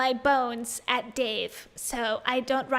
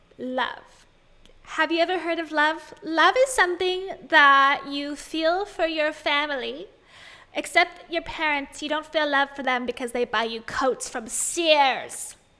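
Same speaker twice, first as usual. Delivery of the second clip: announcer voice reading like a paid ad spot; 3 semitones higher, 4 dB louder than usual. Mocking a motivational ad read: Rachel Hollis ad-read voice. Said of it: "Rachel Hollis reading an ad read voice".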